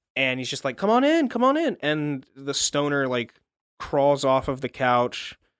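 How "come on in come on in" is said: very high, loud, put-on Louisiana accent. Retelling a story, a tiny man in a yellow suit beckons in a louisiana accent. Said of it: "he's got like that su- like a Louisiana accent".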